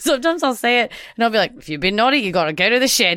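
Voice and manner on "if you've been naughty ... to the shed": put-on Australian accent. Quoting a favorite movie line nobody recognizes: australian accent. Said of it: "he's like doing this Australian accent".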